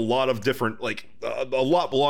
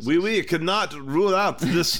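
bad fake French accent, much higher; 4 semitones higher than usual. Reading a line from a document on the extraterrestrial hypothesis, in a bad french accent. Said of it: "I can't do a good French accent".

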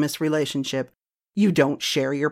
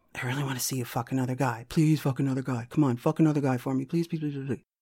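put-on begging, quieter; 2 semitones lower, 9 dB quieter than usual. Retelling how a husband pleads with his wife; imitating a husband begging. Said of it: "Begging, begging, begging".

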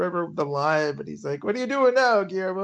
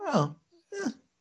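mock unimpressed tone, higher and quieter; 9 semitones higher, 5 dB quieter than usual. Retelling a tv scene where the vampires react: imitating unimpressed vampires. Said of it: "they're not impressed".

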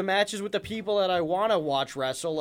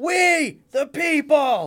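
yelled out, pitched up; 9 semitones higher, 8 dB louder than usual. Describing a wrestler's gimmick, imitating Jack Swagger yelling. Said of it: "he just yells".

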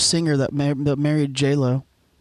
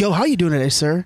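ordinary talk, nothing marked

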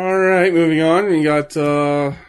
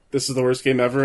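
normal talking voice

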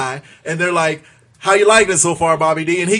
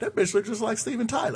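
very quiet, hushed, barely audible, under the breath; 3 semitones higher, 12 dB quieter than usual. Retelling a remark he swears he said no louder than this, said quietly. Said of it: "I swear I didn't say it any louder than this".

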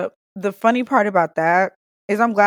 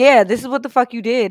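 put-on drunk, emotional outburst, higher; 4 semitones higher than usual. Retelling own words from a later talk: imitating own drunk emotional outburst. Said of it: "me being drunk and emotional".

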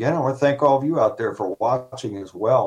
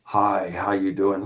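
put-on robotic voice, slower. Speaker retells a guy repeating his greeting back in a robotic voice. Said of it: "in this robotic type".

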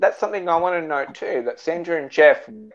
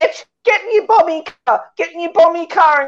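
put-on screeching, very high-pitched, shrill yell; 14 semitones higher, 4 dB louder than usual. Speaker imitating a man screaming at the TV while they watched together. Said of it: "he's like screaming at the TV".

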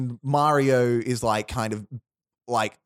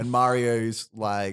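ordinary talk, nothing marked

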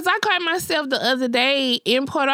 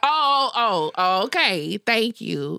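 very slow, drawn-out, acted irritated and mad voice; 5 semitones lower than usual. Retelling a reaction when someone at work avoids the elevator: imitating own mad reaction. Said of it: "I'm mad".

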